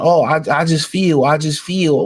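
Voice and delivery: slow, halting woman's voice, groping for words. Mocking people who score boxing by feeling: imitating a woman. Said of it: "Y'all sound like a woman saying".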